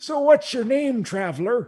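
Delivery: put-on very high, rickety, shaky old-man voice. Voicing a rickety old man greeting a traveler: rickety old Farmer Avery voice. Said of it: "He says".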